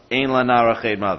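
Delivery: ordinary talk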